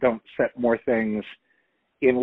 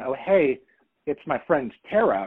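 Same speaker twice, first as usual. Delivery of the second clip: ordinary delivery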